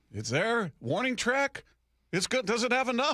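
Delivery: mock unsure, very high-pitched, uncertain delivery. Retelling how a home run call sounded: imitating Gary's uncertain voice. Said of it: "you could hear the uncertainty in Gary's voice".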